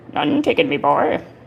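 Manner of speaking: badly done cartoon crab voice. Answering his own joke in a bad Mister Krabs voice. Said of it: "I can't do a good Mister Krabs voice".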